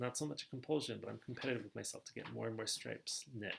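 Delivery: normal talking voice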